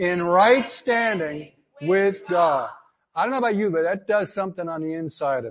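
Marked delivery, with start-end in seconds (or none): 0.0-2.7 forceful, emphatic, full of conviction. Leading a congregation in a declaration, asked to say it like they mean it: emphatic, with conviction. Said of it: "Now say it like you mean it".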